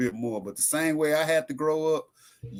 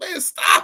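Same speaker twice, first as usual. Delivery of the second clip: loud, mock sarcastic sobbing with real tears; 13 semitones higher, 6 dB louder than usual. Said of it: "you saying an actual cry".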